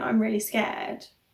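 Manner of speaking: imitated crying voice. Retelling lying on the bed with an iv: retelling own crying speech. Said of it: "laying there crying, saying".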